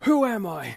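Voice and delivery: mock furious wrestler voice. Retelling a wrestler's crowd bit: furious Supreme imitation. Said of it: "a man furiously pacing around saying".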